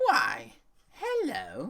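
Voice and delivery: put-on very high, very loud, shrill, crackling old woman voice. Narrating a scene, a voice calls from across the room, crackling older woman voice. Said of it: "the crackling uh, voice of an older woman".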